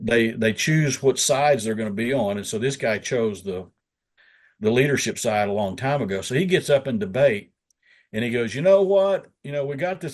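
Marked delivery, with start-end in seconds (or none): 8.5-10.1 put-on country Oklahoma accent, pitched up. Retelling a fellow legislator's floor speech: imitating a rural Oklahoma guy. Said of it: "I try to talk like the rural guys when I can, when I'm imitating them".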